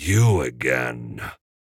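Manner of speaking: very low, hissed with withering scorn. A narrator reads a man turning back at the door to greet someone; withering hiss. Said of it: "Strickler hissed in a withering voice".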